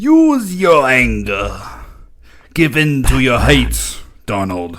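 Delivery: loud, sinister, evil put-on emperor voice. Role-playing the dark side, one speaker addresses Donald in an evil emperor voice. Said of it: "We could do our emperor voice".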